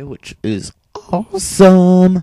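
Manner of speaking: voice cracking. Commenting on a game move when the voice cracks: voice cracking. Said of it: "But my voice cracked".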